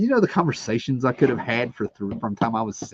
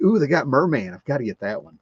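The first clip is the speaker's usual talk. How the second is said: put-on childlike excitement; 2 semitones higher than usual. Retelling finding toys on sale, imitating own past childlike excitement. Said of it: "Got all excited like a little kid".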